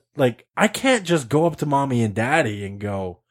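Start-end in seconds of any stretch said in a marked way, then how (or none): none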